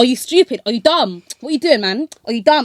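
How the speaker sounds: stern, berating, scolding voice. Retelling a driving instructor scolding a learner driver's mistake: imitating a stern instructor. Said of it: "stern in his voice".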